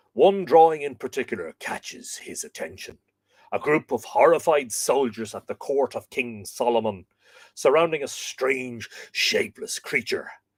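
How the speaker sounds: Hollywood movie trailer narrator voice. Retelling a story's plot, the speaker narrates in a dramatic Monty Pythonish trailer accent. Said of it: "Hollywood trailer sort of dramatic".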